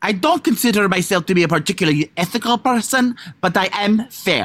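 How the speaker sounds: attempted put-on Italian accent. Taking a turn saying the sentence, in an attempted italian accent. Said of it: "Now I'm going to try to do it".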